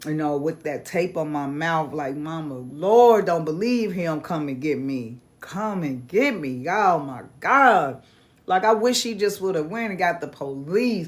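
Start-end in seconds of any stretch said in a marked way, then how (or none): 2.2-8.0 play-acted crying, tearful and pleading. Retelling being upstairs with tape on the mouth: retelling own crying plea. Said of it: "I remember upstairs just crying".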